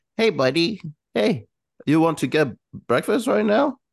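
put-on high, cooing baby voice. Showing how the speaker talks to their dog, in baby talk. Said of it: "Like baby talk".

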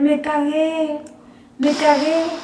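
acted half-cry, slow, stretched, dragged words. Retelling how a friend ran to the bathroom: imitating someone yelling. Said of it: "empieza a gritar".

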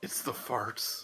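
hushed, soft whispered aside. Whispering a remark to Brutrick in character: whispering. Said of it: "I whisper to Brutrick".

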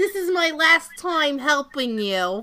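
heavily laid-on bad Jersey accent. Acting out the temp services scene, in a bad Jersey accent as Olympia Dukakis. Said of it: "you sound like Arnold".

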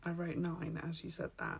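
soft, unvoiced whisper, said aside.

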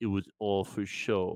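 put-on thick French accent, heavy with phlegm. Retelling what a man said after leaning in, phlegmy French accent. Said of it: "with all the phlegm that he could muster in his French accent".

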